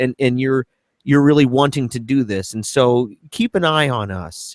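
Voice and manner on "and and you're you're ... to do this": ordinary talk, nothing marked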